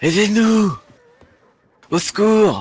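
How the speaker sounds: loud, high, shouting cry. Locked in, a character shouts for help through the window. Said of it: "crie pas trop".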